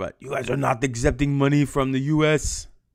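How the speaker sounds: horrible put-on Russian accent. Retelling Cold War history, the speaker quotes Stalin in a bad Russian accent. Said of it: "almost like uh, uh, Schwarzenegger".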